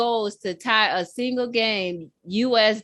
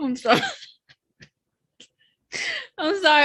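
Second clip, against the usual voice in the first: talking through laughter, higher; 7 semitones higher than usual. Apologizing to the other speaker mid-conversation, laughing while talking. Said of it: "I'm laughing 'cause it's dark".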